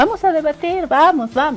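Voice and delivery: mimicked gentle, soft voice. Repeat what she said about debating, imitating her characteristic soft tone. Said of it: "en el tonito suave que a ella la caracteriza".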